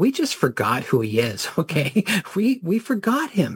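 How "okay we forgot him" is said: slow, nervous laugh through the words. Speaker talking with a host: nervous laugh. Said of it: "I say it with a nervous laugh".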